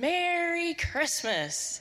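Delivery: put-on small, high-pitched young boy's voice. Retelling how a little guy greeted a somber crowd, in a little boy voice. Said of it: "in this little boy voice".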